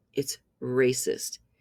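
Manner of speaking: slow, flat, firm delivery.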